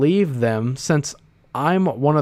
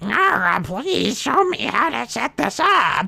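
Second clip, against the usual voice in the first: put-on creaky, high-pitched old man voice; 9 semitones higher than usual. Joking after another speaker says he's turning old: put-on old man voice. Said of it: "I'm turning into an old man".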